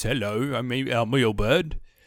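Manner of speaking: put-on northern English accent. Describing how the character Ilbert is now voiced, imitating his northern English accent. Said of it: "he's very northern English now".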